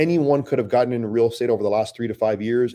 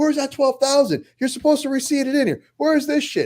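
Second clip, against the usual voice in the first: very high, shrill mock yelling. Speaker reenacts himself yelling all day in his office; imitating own yelling. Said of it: "I'm yelling all day".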